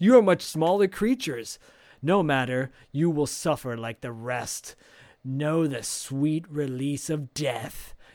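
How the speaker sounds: put-on alien voice. Recapping a movie, acting out the alien after freezing the boy in a beam: Psycho Goreman voice. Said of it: "And then suddenly the alien walks out and he goes".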